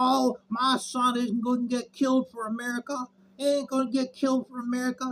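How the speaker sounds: high, weepy, tearful crying soccer-mom voice. Imitating soccer moms protesting the draft: imitating crying soccer moms. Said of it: "all these soccer moms crying".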